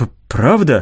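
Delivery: plain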